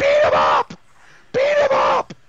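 shrill, very high, loud, repeated swooping scream. Retelling what a woman on the carriage screamed, retelling a scream. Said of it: "at first she's screaming".

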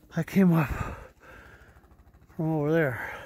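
breathless, out of breath, winded. After climbing a cliff to watch the plow work, speaking out of breath. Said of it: "I'm out of breath".

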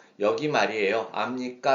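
ordinary talk, nothing marked

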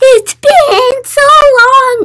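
put-on high-pitched voice. Reacting to a video, copying a line from it: imitating a high-pitched voice. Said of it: "I like the high pitch he does".

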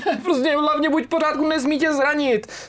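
high, desperate outcry.

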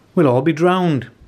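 high, tiny, squeaky mouse voice. As a wall of water races down the valley, the mouse speaks, squeaked. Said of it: "squeaked the mouse".

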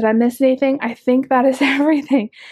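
breathless, winded. Speaker wrapping up a shopping haul for viewers, out of breath. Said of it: "I'm out of breath".

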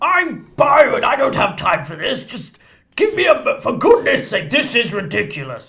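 deliberately bad, loud, singsong delivery. Voicing a stranger doing a bad impression of Byron. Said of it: "It sounds like a bad impression of Byron".

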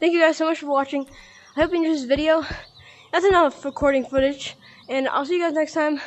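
winded, still catching breath. Signing off a gaming video to viewers, out of breath. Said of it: "sorry, I'm out of breath".

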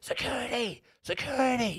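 acted, very high-pitched, screamed shout. Seated in the front rows during a show, retelling what was screamed from the stage: imitating screaming from the stage. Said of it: "all I hear is the screaming from the stage".

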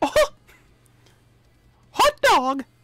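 high-pitched, bouncy, squeaking voice. Recalling confusing her while she watched Mickey Mouse, Mickey Mouse voice. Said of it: "I can make a Mickey impersonation".

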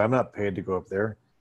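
soft, mumbled, under-the-breath mutter. One of the men waiting in the car down below mutters: under his breath. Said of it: "definitely under his breath go".

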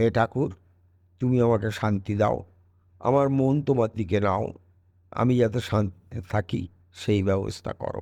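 usual speaking voice

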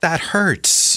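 very high, uncertain, upset squeaky cry. Narrator reads Isaac protesting to his father Abraham, squeaky, upset voice. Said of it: "his voice rising to a squeak, uncertain and upset".

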